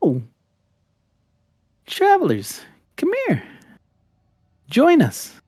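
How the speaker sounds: very high, sing-song, swooping pixie voices. Narrating for the players, the storyteller voices a group of pixies in high-pitched pixie voices. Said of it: "you hear these like high pitched voices".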